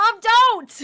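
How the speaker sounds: shrill, very loud, very high shrieking scream. In character during a game, crying out to mom, screaming. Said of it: "as you scream that at her".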